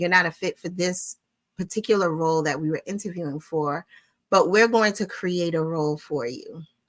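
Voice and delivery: ordinary delivery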